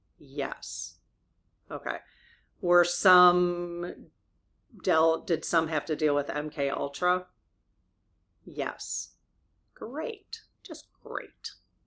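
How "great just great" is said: dry, sardonic, sarcastic tone in a breathy near-whisper. Reacting sarcastically to a yes answer about MK Ultra: sarcastic. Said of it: "I'm being sarcastic".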